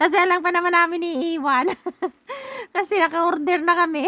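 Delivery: high-pitched, laughing through the words.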